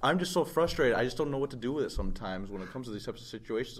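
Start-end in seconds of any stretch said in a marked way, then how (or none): none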